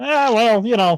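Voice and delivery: very high, goofy voice. Pitching a skit where Gator sneaks into the gym: Gator voice. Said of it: "do my best Gator voice".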